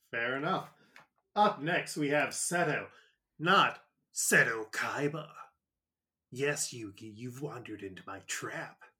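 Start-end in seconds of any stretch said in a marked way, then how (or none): 6.3-8.7 put-on voice strained from the throat. Discussing the name Seto, doing a quick impression: Seto Kaiba voice. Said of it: "hurt my voice".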